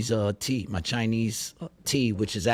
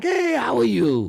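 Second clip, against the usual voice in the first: very high, drawn-out, slow put-on Chinese accent; 13 semitones higher, 6 dB louder than usual. Retelling how the woman taking his order greets him: Chinese accent impression. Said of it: "that's my Chinese impression".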